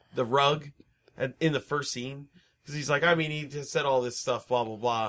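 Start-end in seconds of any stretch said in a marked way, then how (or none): none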